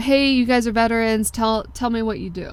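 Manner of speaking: ordinary talk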